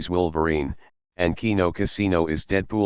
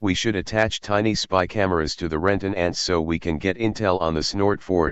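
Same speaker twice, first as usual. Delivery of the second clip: usual speaking voice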